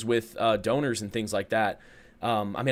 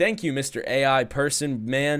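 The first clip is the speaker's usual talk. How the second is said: mocking, sarcastic tone; 4 semitones higher than usual. Retelling a remark made to the Taco Bell AI bot, retold sarcastic remark. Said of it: "I just sarcastically remarked things".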